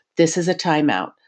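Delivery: put-on very calm, even voice. Retelling a dad with a screaming toddler in a cafe: imitating a dad's calmest voice. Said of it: "in his calmest voice saying".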